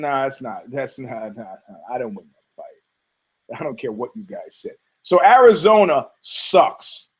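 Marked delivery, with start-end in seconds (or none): 0.0-4.8 quiet, low, offhand, dismissive tone. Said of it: "he's like".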